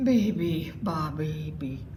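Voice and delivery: sighed out, drowsy and sleepy. Reading a story aloud, voicing the bear as he closes his eyes: sighing. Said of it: "sighed the bear".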